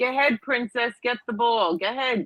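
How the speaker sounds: mock mild yell. Retelling a clip of someone in a park: imitating someone yelling at kids. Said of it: "he's yelling at them".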